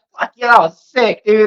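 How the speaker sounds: thrilled, laughing, words laughed out mid-grin. Retelling the passenger's reply after hitting the windshield: imitating someone laughing while talking. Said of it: "laughing like".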